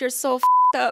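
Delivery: put-on very loud burst, belted out in a Caribbean accent. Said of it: "she came over to me in her Caribbean accent".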